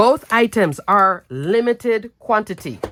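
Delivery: strong, firm stress on limited. Announcing items available now in limited quantity: strong stress on limited. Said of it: "Notice I'm stressing the word limited quantity".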